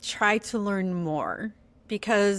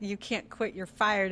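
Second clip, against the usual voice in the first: usual speaking voice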